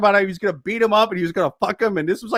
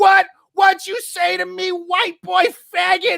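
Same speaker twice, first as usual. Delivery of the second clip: put-on very high, furious, drawn-out yelled scream; 10 semitones higher than usual. Retelling a press conference insult yelled at an audience member: imitating Mike Tyson screaming. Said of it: "He screams at this guy".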